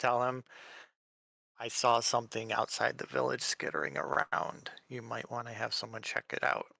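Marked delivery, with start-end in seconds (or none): 1.6-6.6 whispered, hushed. Lean in to the elder, trying not to cause alarm, and speak in a hushed voice. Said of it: "in a hushed voice".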